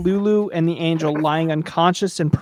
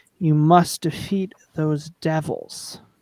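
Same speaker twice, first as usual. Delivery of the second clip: slow, sibilant, disembodied hissing hag voice. Voicing the hag urging the players to fight: hissing hag voice. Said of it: "hisses the hag's disembodied voice".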